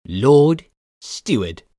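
loud, taunting, mocking voice. A stranger taking a seat by the throne addresses the lord steward in a mocking voice. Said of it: "in a mocking voice".

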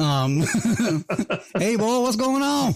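very high, casual, easygoing Southern accent. Speaker contrasts a professional greeting with how he talks casually: talking Southern. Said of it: "I talk Southern".

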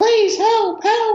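very high, far-off mock screech. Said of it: "Miss Loretti is screaming".

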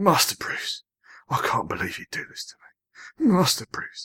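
very upset, pleading tone. Asked whether he can do one: mock-upset Michael Caine impression. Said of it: "I can do Michael Caine, and you have to sound very upset".

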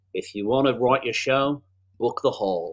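try-hard, attempted Australian accent. Quoting a woman's comedy saying, attempting her accent. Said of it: "whose accent I will now do great indignity to by attempting to replicate".

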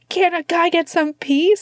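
mock, very high-pitched, exploding outburst. Retelling a character snapping at someone who walked by: imitating an outburst.

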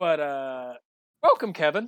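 voice breaking partway through the phrase. Welcoming a new member to the podcast community, voice cracking. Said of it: "My voice is cracked".

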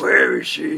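very loud, growled, demanding voice. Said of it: "Beor's one that was like".

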